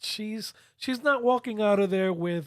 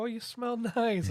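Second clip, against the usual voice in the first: mock giggly voice, words broken by laughter; 2 semitones higher, 4 dB quieter than usual. Retelling what the girlfriend said after the shower: imitating someone laughing while talking. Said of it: "And she's laughing".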